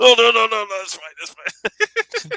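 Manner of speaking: very high, swooping put-on Chinese broken-English accent. Retelling a sitcom scene where the restaurant host answers: imitating a broken English accent. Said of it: "with a broken English accent".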